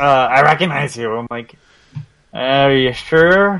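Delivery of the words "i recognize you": raspy, rough, gravelly voice. Imitating a man who says he recognizes someone, in a raspy voice. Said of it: "He's got a raspy voice".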